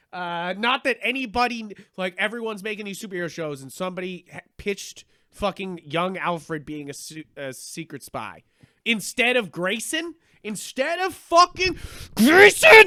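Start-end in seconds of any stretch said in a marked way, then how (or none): 4.5-12.8 loud, heated, fed-up angry rant, climbing. Complaining about a show that was pitched instead of grayson: angry. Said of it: "Sorry, I'm angry".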